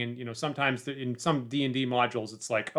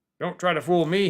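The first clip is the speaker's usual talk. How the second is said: growling, menacing voice; 4 semitones higher than usual. Speaker voicing a character's reply after trying everything, growling. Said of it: "he growls".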